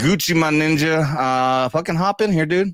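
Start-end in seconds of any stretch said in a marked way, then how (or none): none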